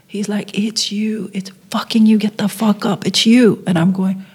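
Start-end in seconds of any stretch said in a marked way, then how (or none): 0.5-3.6 mild, insistent, urgent yell, reined in. Retelling a brother's reaction when the award was announced: imitating brother screaming. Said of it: "my brother, like, screaming".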